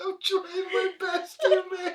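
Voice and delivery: high crying-laugh voice, through tears of laughter. Trying to regain composure during a spirit box session, crying with laughter. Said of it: "You're crying".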